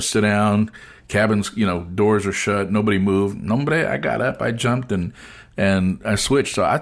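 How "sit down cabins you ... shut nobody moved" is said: normal talking voice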